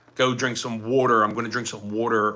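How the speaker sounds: usual speaking voice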